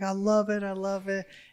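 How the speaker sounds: put-on very high, thrilled, drawn-out child's scream. Retelling a daughter's excitement over a revved car: imitating a screaming daughter. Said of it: "She's screaming".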